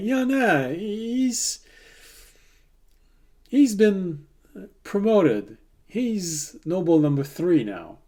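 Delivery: playful smug ribbing. Voicing a character undermining the captain's attempt: smirking, teasing tone. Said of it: "She has a little smirk when she says that".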